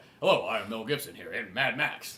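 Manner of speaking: low, corny, badly dubbed martial-arts film voice. Friends discuss foreign dubbed films; one imitates the dubbing, kung fu movie dub voice. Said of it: "It sounds like he's in a kung fu movie".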